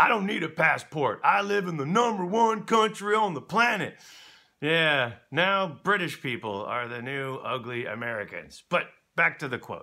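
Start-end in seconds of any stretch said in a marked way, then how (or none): 0.0-4.0 mock dumb-sounding American tourist voice. Speaker recalling how Americans used to be seen abroad, mocking a dumb American tourist. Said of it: "The ones who would say".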